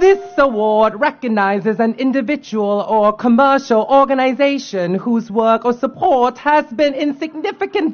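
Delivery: attempted, put-on British accent. Reading out an award description beside the British ambassador: put-on British accent. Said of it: "I'm gonna try to read out this in a British accent".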